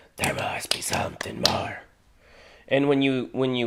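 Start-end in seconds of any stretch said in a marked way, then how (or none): 0.2-1.8 whispered, quieter. Showing a learner how to say the line: whispering. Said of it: "whisper it".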